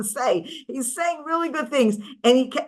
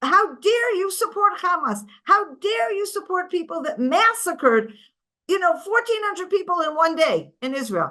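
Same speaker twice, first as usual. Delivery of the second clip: play-acted angry yelling, pitched up; 6 semitones higher, 4 dB louder than usual. Recounting confronting people who support hamas, retelling past yelling. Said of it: "So I'm yelling at them".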